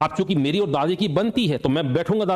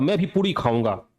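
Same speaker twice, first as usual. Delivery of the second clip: ordinary delivery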